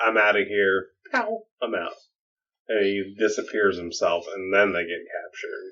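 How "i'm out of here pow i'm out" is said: furious, angry, fed-up outburst. Recounting a story where a character throws a fit and leaves, imitating an angry fit. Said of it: "He throws a fit and he's like".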